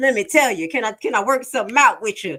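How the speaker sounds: eager, pleading begging. Imitating a witness trying to work out a deal: imitating Woody snitching. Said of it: "I'll be like Woody at that investigation".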